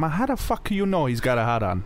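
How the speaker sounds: put-on heavy Italian accent. Retelling his father's reply to his brother while watching baseball, heavy Italian accent. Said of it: "my father had a heavy Italian accent".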